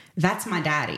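normal talking voice

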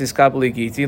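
usual speaking voice

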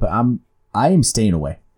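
ordinary delivery

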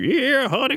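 put-on very high-pitched southern old-lady voice. Describing the old checkout lady at a store, imitating a southern older woman. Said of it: "like southern looking woman, just like probably chain smokes".

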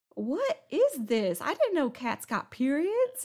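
high, loud mock dumbfounded squeal of amazement.

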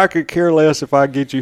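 ordinary talk

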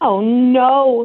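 startled, alarmed cry. Reacting during a limerick segment, alarmed. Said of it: "you said it in such alarm".

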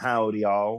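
attempted put-on Texan accent. Trying out an American greeting after an Australian one, attempted Texan accent. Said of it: "I feel like any Texan listeners will like".

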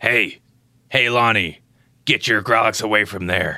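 low cartoon gnome character voice. A podcast host at the sign-off calls out to Lonnie, Jerry the Gnome voice. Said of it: "that sounded like Jerry the Gnome".

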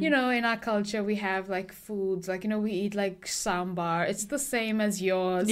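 ordinary delivery

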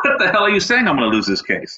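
play-acted, very high, swooping indignant outburst. Retelling own reply to the court reporter's warning: retelling an angry retort. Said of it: "I'm pissed".

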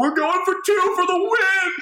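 acted, shrill, very high screamed delivery. Retelling how Alex reacted during the game, imitating Alex screaming. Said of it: "I hear Alex screaming".

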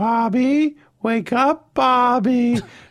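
haunting, ghostly call, high, slow and drawn out. Retelling how a mother used to wake the speaker: ghostly voice like the mother in Psycho. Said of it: "It was like a ghost from Psycho".

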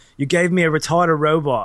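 put-on loud, belted-out South African accent. Retelling a favorite movie scene where one man holds a gun on another, Ninja's South African accent. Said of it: "okay this is my best south african accent".

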